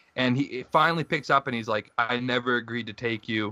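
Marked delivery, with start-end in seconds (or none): 2.0-3.5 vague, put-on Eastern European accent. Retelling a man who finally answered the phone, in an eastern european accent. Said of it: "in like some Eastern European accent".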